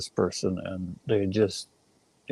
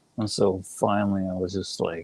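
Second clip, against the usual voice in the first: ordinary talk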